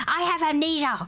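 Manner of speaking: mock rude, snappy tone. Retelling her reply after being asked again about the fine: imitating her rude attitude. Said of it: "that's how she speaks".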